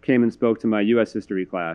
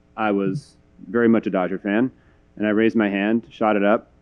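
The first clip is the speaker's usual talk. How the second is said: usual speaking voice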